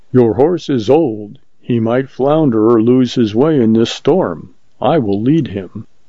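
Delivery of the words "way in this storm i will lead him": plain reading voice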